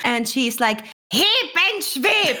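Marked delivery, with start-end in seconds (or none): 1.1-2.4 very high shriek full of rage. Player voicing Cecily as she loses control of her temper, shouting in anger. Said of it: "Cecily gets so angry".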